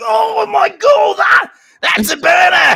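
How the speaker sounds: put-on Cockney accent, very high-pitched and loud outburst. Imitating british fight commentators four rounds into a match, cockney accent. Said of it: "all their Cockney accent comes out".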